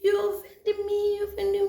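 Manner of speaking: put-on crying speech. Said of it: "I'm crying, I'm crying".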